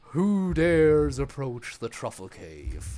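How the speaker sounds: frightening voice. An unseen voice calls out as two adventurers approach the cave: scary voice. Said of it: "That was a really scary voice".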